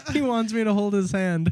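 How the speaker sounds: high, teasing, mocking, laughing through words. Retelling what the dental assistant said to the dentist, imitating someone laughing while talking. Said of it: "laughed with the dentist".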